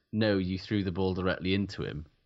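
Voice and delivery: ordinary talk, nothing marked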